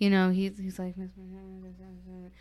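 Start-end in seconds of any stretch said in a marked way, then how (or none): 1.0-2.3 soft, breath-only half-whisper. Retelling what he half-whispered to the speaker: imitating a half-whisper. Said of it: "whispered it to me".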